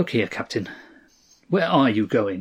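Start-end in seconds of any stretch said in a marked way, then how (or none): none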